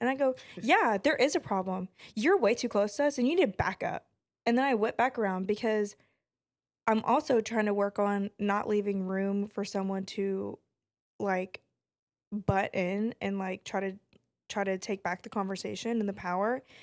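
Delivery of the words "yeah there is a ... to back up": angry, mad, pointed, straight delivery. Retelling confronting a man who asked if there was a problem: retelling an angry retort. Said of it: "at that point, I was mad".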